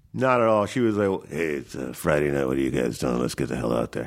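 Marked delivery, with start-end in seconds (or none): 1.2-4.0 put-on very low old-time movie-star voice. Describing a co-star, quoting her like an old-time movie star: imitating Kathleen Turner. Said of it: "like an old-time movie star".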